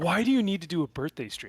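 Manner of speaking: put-on disgusted tone. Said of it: "he said it, like, so disgusted".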